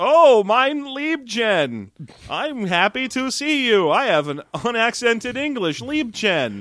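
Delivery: put-on very slow, high, drawn-out, friendly grandpa voice. Imitating an actor who keeps saying Liebchen: Ernest Borgnine impression. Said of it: "there's our great Ernest Borgnine impression".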